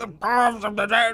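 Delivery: full-throated, very loud, high-pitched scream. Recalling how a game character shouted from the back on every pass, imitating Gimli's scream. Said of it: "Gimli would just scream".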